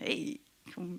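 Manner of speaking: whispered, fake put-on American accent. Speaker who worked on games quotes a marketing person, put-on American accent. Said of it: "I did them with an American accent".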